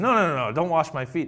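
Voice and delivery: haughty, proud, stubborn, insistent tone. Retelling Peter refusing Jesus a second time: imitating a prideful refusal. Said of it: "all of a sudden he becomes prideful".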